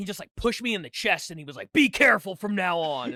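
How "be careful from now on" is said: mock pissed-off, stern, loud and slow. Retelling what an angry cyclist said after a push: imitating an angry man. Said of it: "all pissed off, and he was mad at me".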